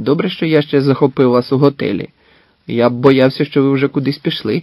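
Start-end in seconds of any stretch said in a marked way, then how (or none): none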